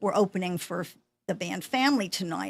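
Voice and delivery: ordinary talk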